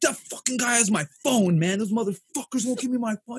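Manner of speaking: mock panicked, frantic, high outburst. Speaker retelling finding Fish on the stairs, imitating Fish freaking out. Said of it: "He's freaking out".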